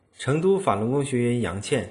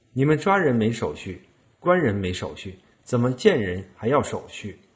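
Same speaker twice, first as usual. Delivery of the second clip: ordinary talk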